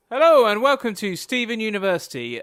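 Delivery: big, loud announcer-style intro delivery.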